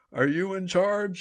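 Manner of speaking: acted-out shouting. Retelling how a man locked eyes with him over the rotors: retelling a yell over rotor noise. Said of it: "he's yelling over the sound of the rotors".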